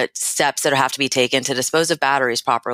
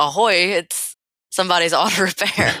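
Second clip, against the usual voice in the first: pitched-up, slow pirate voice; 5 semitones higher than usual. Suggesting shops answer the phone for Talk Like a Pirate Day: pirate voice. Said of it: "for Talk Like a Pirate Day".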